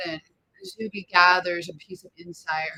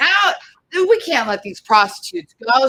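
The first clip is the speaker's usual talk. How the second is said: furious, loud, angry yelling; 7 semitones higher, 7 dB louder than usual. Voicing a guard who won't let the group go: angry yelling guard. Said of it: "starts yelling, getting angry".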